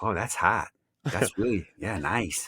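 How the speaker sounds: put-on Minnesota accent. Joking about how people in Minnesota react: imitating Minnesota people. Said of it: "there are people in Minnesota going".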